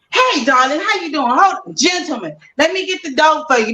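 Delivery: over-the-top, extremely friendly, chummy tone. Imitating a fiance greeting people: imitating an extremely friendly man. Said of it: "extremely freaking friendly".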